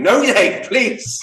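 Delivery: shrill, very high, loud screaming. Retelling waking in the night over the album: imitating own screaming. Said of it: "woke up in the middle of the night the other day screaming".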